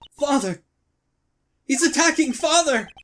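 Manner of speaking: put-on high, loud, terrified cry in a child's voice.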